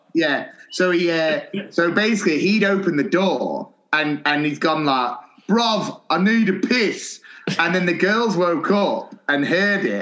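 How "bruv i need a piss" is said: play-acted high, drawn-out hollered call. Retelling what a fellow teacher shouted one night: imitating someone shouting. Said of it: "I kept hearing Cockney John shouting".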